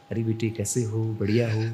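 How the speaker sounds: warm, affectionate tone, full of love. Showing how tone changes when speaking lovingly to a child: warm, affectionate tone. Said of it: "किसी से हम प्यार से बात करते बच्चे को".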